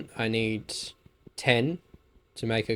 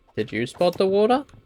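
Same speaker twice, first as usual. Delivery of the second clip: put-on high, pitched-up kids' cartoon voice; 8 semitones higher, 3 dB louder than usual. Speaker searching for water in a cave, asking the listener, in a Dora voice. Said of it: "had to sound like Dora for that".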